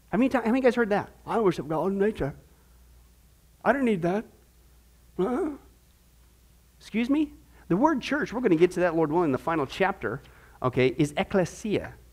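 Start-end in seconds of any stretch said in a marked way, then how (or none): 1.2-4.2 put-on British accent. Imitating someone who says they worship God in nature: British accent. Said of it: "do that British accent again".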